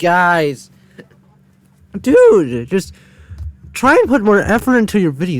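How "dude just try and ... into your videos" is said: high voice cracking mid-sentence. Reacting to a Minecraft add-on video, the speaker addresses its creators; voice cracking. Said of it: "Sorry for the voice crack".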